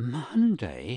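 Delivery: gasped words. A man, hearing the books will be examined on Monday, gasps. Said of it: "gasped McEvoy".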